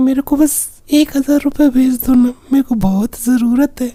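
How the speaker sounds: high-pitched, sweet, fake girl voice.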